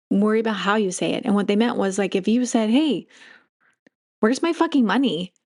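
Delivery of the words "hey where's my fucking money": bright, joyful, happy-go-lucky, cheerful tone. Showing how the way you say it matters, said with joy. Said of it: "And you said it with joy".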